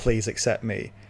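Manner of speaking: ordinary talk, nothing marked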